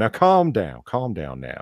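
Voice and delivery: slow, swooping, soft Southern gentleman drawl. Picturing a friend as debate moderator: imitating a softly spoken Southern gentleman. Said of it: "the softly spoken Southern gentleman".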